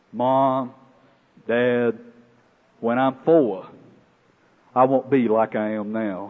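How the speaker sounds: put-on gruff child voice. A parent retelling what their young son said to comfort them, imitating Nathan's gruff little voice. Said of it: "in his gruff little voice".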